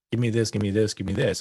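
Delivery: normal talking voice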